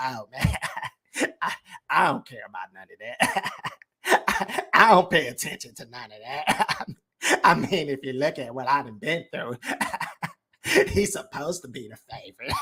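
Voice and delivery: amused, chuckling talk, laughing through the words. Mocking Earl's interview answers, imitating Earl laughing while talking. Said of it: "Everything is funny to Earl".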